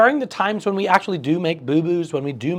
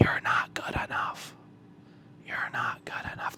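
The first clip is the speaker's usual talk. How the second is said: very quiet, soft, close whisper. Speaking as self-deprecation into the listener's ear, whispering. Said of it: "I'm going to whisper in your ear".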